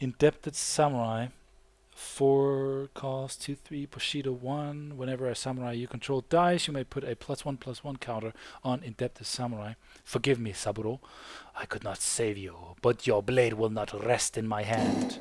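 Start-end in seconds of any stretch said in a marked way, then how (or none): 10.1-15.2 put-on Middle Eastern sounding accent. Reading a card's flavor text aloud: Middle Eastern sounding accent. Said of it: "a Middle Eastern sounding, uh, a Middle Eastern sounding, um, accent".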